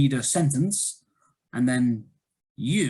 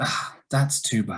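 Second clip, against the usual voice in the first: sad, sympathetic falling pitch on bad; 2 semitones lower than usual. Responding to sad news in an intonation lesson, falling intonation on bad. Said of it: "falling intonation".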